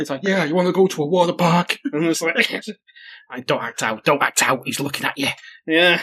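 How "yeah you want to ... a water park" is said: put-on voice sounding like an old man. Retelling a dream where The Rock answers the speaker, in a failed The Rock impression. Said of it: "Why does The Rock sound like an 80-year-old".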